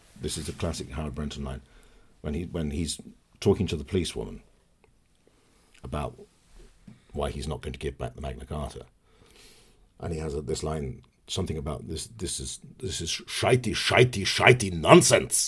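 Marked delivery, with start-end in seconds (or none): 12.8-15.5 deliberate, slow, raised, put-on Russian accent. Quoting a line from playing a Russian gangster on stage: Russian accent. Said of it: "Can you do a Russian accent?".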